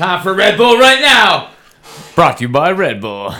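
loud, slow mock commercial announcer voice. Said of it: "We're not really sponsored by Red Bull".

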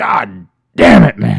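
booming, drawn-out, slow, loud, rough bellow. Doing a podcast host's impression of a wrestling boss: Vince McMahon impression. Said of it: "His McMahon".

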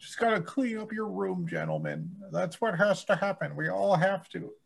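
very high-pitched put-on voice with wide swooping swings. Joking with a friend about someone who got famous, imitating the lobster-hierarchy guy. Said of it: "You sound pretty much like him".

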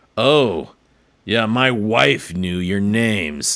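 ominous, threatening, menacing tone. Retelling what the music teacher's husband said on the first days of class, mock-menacing. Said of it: "he said it with like this menacing".

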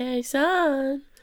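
high motherly calling voice with son drawn out. Recapping how an anime starts, acting out the mom calling her son. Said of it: "she's more like".

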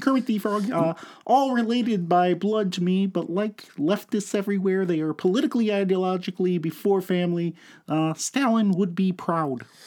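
pitch pushed way up like a puppet. Having offered to do Kermit, show the other speaker your Kermit the Frog impression. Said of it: "I can do Kermit if you want".

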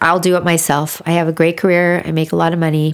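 ordinary delivery

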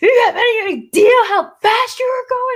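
mock very high, shrill, high-pitched screaming. Speaker retells how a man who came up to him screamed at him, retelling a scream. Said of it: "Just like yelling at me".

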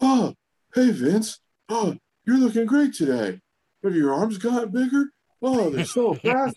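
very high mocking voice. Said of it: "[name] is one of the many impressions that he would do".

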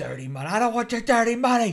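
put-on escalating outburst, very high, rising yell. Describing an undercover cop in a film, retelling a yell. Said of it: "He's yelling".

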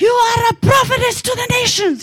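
high put-on scream in French accent. Recalling waking to a friend standing over them, imitating Denise screaming in French accent. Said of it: "she's screaming in her French accent. She's like".

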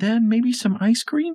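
very high, super sweet, sugary, pleading cute voice. Reading a story, a boy asks for ice cream: super sweet "I'm so cute" voice. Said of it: "super sweet, "I'm so cute" voice".

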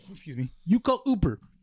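put-on Russian accent in English. Retelling what a woman said in a conversation about the bus, in a Russian accent. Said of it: "it sounds like a Russian accent".

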